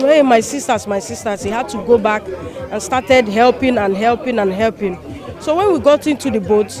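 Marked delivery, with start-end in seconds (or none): none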